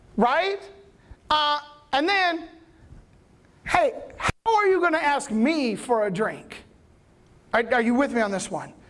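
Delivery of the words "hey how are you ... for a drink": sarcastic, mocking attitude. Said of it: "I believe there is so much attitude".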